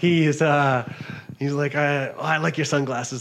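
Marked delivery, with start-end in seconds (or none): 1.8-3.2 put-on Spanish accent, much higher pitch. Retelling what a man said to the speaker, in a put-on Spanish accent. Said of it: "I don't know why he has a Spanish accent right now".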